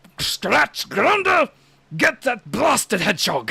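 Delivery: very loud villain shout with wildly swinging pitch. Recalling the old Sonic show with Scratch and Grounder, doing the Robotnik voice. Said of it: "the Robotnik that sounds like this".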